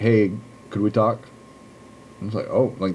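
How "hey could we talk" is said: imitated strange deadpan delivery. Recapping a show, quoting a man who comes back and asks a woman to talk, retelling a deadpan line. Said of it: "strangely, deadpanly".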